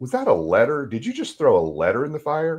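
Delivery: acted heavy, pointed sarcasm with swooping intonation. Retelling questioning a father who burned a letter: retelling own sarcastic remark. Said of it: "And I got really sarcastic".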